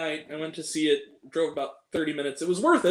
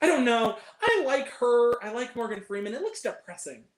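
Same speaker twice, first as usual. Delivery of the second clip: put-on high, open, unfiltered, unguarded chatter; 5 semitones higher than usual. Recounting a moviegoer talking in the theater, the speaker imitates their loud talk. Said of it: "exactly my tone of voice, if not louder".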